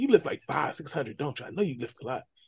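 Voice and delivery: voiced as a woman. Retelling how a woman at breakfast praised the speaker's strength: imitating the woman at breakfast. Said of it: "She starts, like, gyrating and dancing".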